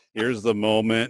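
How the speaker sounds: usual speaking voice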